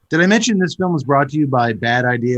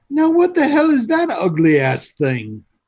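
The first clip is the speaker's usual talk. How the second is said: put-on very high, half-hearted, loose British accent; 11 semitones higher than usual. Acting out a character's line while retelling a story: kind of a british accent. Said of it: "That was kind of a British accent".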